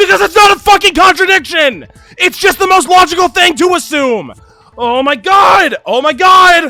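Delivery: frantic, worked-up, high and loud outburst. Arguing a theory in a game, then freaking out. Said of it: "I'm freaking out now".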